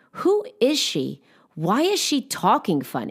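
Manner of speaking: mean, catty, swooping sing-song tone. Retelling girlfriends mocking a woman backstage: imitating girls saying something very loudly. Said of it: "They were saying very loudly".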